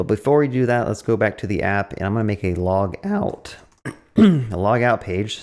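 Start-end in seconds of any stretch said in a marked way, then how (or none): 2.5-5.4 voice breaking and cracking partway through phrase. Walking viewers through making a log out page, the speaker's voice cracks. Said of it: "my voice cracked there".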